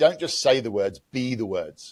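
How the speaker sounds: usual speaking voice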